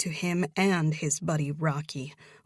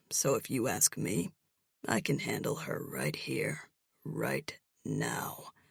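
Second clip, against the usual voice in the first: annoyed, irritated, rough, gravelly whisper; 5 semitones lower, 7 dB quieter than usual. Reading a romance novel aloud, a mystery man threatens: irritated gravelly tone. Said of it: "with a gravelly tone".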